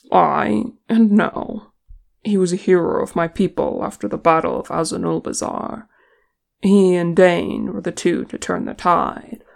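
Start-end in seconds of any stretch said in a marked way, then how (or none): none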